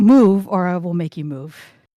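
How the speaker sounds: deep, booming, thundering voice. A player casts a spell to speak to someone in a thundering voice. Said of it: "Cast thundering voice".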